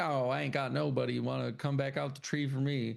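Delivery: put-on downcast, woe-is-me, mopey moan. Retelling a scene where everyone else reunites, leaving Ernest alone; mock-sad Ernest voice. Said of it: "and then he's all sad".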